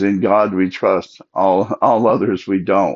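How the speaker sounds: ordinary delivery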